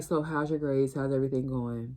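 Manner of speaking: put-on dreary, dead, lifeless voice. Retelling a counselor asking about grades: imitating a dreary, dead voice. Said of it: "dreary and, like, dead".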